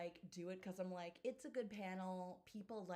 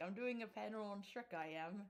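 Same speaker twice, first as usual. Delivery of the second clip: put-on British accent, laid on thick. Imitating a friend who posts low-effort jokes, imitating a friend with a British accent. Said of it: "he sounds like this in my imitations of him".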